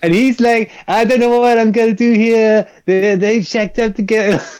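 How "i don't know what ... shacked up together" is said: high cartoonish voiceover-style dub voice. Describing a show's dub, imitating the youngest guy: South Park-style voiceover. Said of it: "he's speaking all like this".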